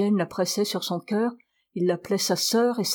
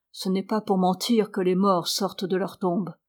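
plain

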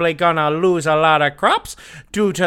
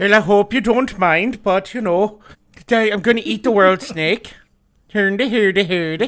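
fake exaggerated Swedish-style accent; 2 semitones higher than usual. Retelling the world serpent story, voicing Thor in a put-on accent. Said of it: "What is this accent?".

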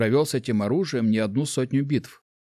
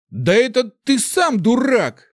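very high, rising, furious angry shout; 12 semitones higher, 6 dB louder than usual. Reading fiction aloud, a young man leaps up and shouts back: angry shout. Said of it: "гневно выкрикнул он".

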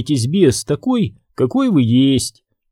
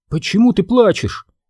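fearful, frightened, scared voice; 7 semitones higher than usual. Sabrina asks Daphne, who has suddenly burst into tears: frightened question. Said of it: "испуганно спросила Сабрина".

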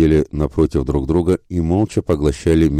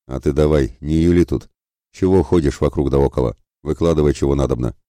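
plain reading voice

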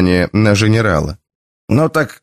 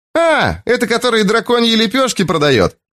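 gleeful, joyful cry, very high-pitched; 10 semitones higher than usual. An unseen voice from behind calls out about a young man: joyful exclamation. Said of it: "радостно воскликнул невидимка сзади".

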